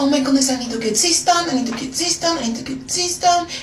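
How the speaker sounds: put-on French accent. Retelling how she talked to herself at home: french accent. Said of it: "I'd be talking my French accent".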